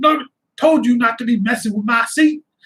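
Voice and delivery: yelling in a high, accusing tone. Retelling a scene of her yelling at Norbert, imitating Rasputia yelling. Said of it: "she's yelling at Norbert".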